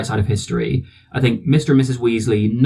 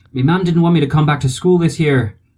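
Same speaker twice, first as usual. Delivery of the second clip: dreadful put-on Irish accent, pitched high; 5 semitones higher, 3 dB louder than usual. Quoting a film scene where a classmate confronts Harry: dreadful Irish accent as Seamus. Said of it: "Sorry for the accent, it's dreadful".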